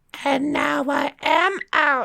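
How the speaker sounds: very high, crackly haunted-doll voice. Retelling a story about a doll, voicing what people heard: crackling doll voice. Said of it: "a crackling voice going".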